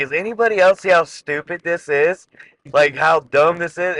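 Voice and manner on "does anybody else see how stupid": plain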